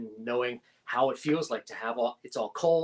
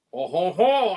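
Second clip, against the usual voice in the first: put-on French accent on "oh ho ho", raised and loud; 5 semitones higher, 6 dB louder than usual. Retelling a table-read line spoken with a french accent: french accent. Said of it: "Justin speaks with a French accent".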